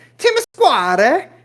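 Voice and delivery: Italian accent, very high and very loud. Showing how to say a place name in Italy: Italian-accented English. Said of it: "in English, but in their accent".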